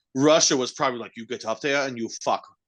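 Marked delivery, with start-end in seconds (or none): 1.2-2.4 put-on German-accented voice. Acting out russia's orders to two people: german accent. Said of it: "I went German with that".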